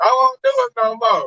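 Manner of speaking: slow, mock-tearful, pleading voice. Acting out a cheating woman begging outside to her husband: imitating a woman begging and crying. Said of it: "she outside begging, crying, mascara running".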